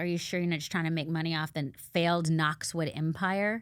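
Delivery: plain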